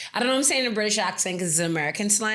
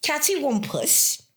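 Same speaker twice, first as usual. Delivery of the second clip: put-on British accent, slipped into; 8 semitones higher than usual. Explaining the meaning of a favorite word, in a British accent. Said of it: "I don't know why I'm saying it with a British accent".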